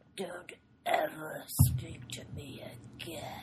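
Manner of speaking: slow, breathy whisper, breathed out slowly. Retelling a movie scene about a motel clerk: Kurgan impression. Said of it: "this is the line that I could do".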